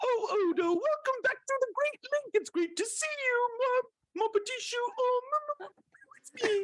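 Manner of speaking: very high-pitched pig puppet voice. Speaker imagines Miss Piggy cast in a Star Trek episode; Miss Piggy voice. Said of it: "It would sound something like this".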